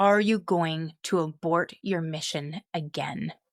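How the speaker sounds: put-on loud, booming voice. Telling of a voice heard from the landing, imitating a loud booming voice. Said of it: "It's really loud and booming".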